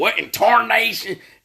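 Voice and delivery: very high, old-timey cartoon prospector voice. Retelling a gas station attendant who looked like a cartoon prospector: old cartoon prospector voice. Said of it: "one of those old prospectors from them old cartoons".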